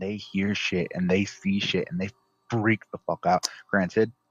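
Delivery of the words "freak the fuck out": normal talking voice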